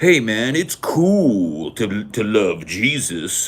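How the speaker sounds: very slow, patronizing, condescending cool-guy pitch. Imitating religion talking down to nineties kids: imitating a condescending pitch to kids. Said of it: "religion was that way in the nineties".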